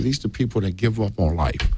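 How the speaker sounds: plain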